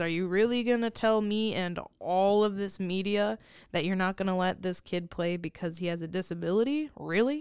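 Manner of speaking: ordinary talk, nothing marked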